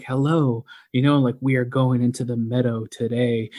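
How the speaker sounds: restrained, held-back, typical podcast voice. Mocking how other podcasters talk into the microphone, reserved podcast voice. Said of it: "like the typical podcast voice. Like very reserved".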